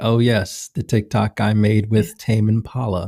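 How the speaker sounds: acted, slow, bone-dry deadpan delivery. Imitating a driver's reply about the TikTok he made: imitating Oscar Piastri's dry delivery. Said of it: "His dry delivery is what sells it".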